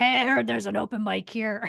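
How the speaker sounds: put-on gravelly comedian-style voice. Retelling how a comedian showed up at the open mic: imitating a gravelly voice. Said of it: "he has this real gravelly voice".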